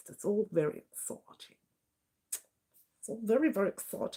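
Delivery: hushed, breathy, put-on upper-class posh voice. Saying how exciting the vote is, trying to sound posh. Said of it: "I'm trying to sound posh now".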